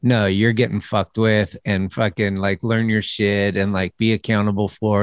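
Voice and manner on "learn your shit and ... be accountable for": ordinary talk, nothing marked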